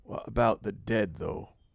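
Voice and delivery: quiet, dropped voice. Voicing a character who asks the group about the dead: lowered voice. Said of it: "she lowers her voice".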